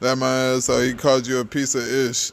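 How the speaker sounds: normal talking voice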